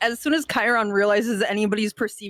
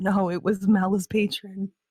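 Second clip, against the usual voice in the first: whispering, acted. Voicing a character leaning over to answer: whispering in character. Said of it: "lean over and whisper".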